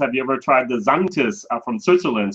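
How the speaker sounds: plain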